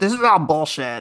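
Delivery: put-on cartoon kid voice. Joking about a publisher's quote, saying it in a Cartman voice. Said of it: "If I could do a Cartman voice".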